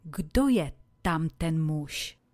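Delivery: ordinary talk, nothing marked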